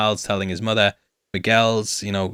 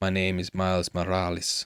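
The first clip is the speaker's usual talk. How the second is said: put-on Spanish accent, said quieter; 5 dB quieter than usual. Recounting the unmasked figure's line, doing Miles Morales with Spanish accent. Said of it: "He says it more Spanishly".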